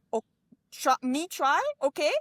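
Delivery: slow, high, simple broken speech. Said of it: "my mother was really impressed at my Japanese, which was me going".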